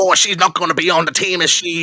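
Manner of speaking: put-on awful, botched Australian accent, loud, high. Reviewing a film with a co-host, quoting a line in a bad australian accent. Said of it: "one of the worst Australian accents".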